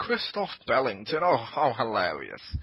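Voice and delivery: put-on, affected, upper-class posh voice. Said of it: "I was talking like Simon".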